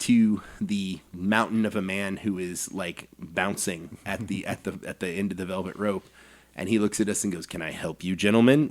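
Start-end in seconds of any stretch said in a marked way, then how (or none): 7.5-8.7 mock doorman voice, wary, intimidating and skeptical. Retelling a visit, the speaker quotes a bouncer greeting the group: mock this-better-be-good tone. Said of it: "In that tone of voice, like this better be good".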